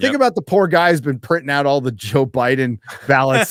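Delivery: ordinary delivery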